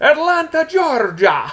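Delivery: put-on thick Iranian accent, very high and swooping. Retelling being questioned about Canada, the Sheik answers where he's from: thick Iranian accent. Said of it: "with this thick Iranian accent".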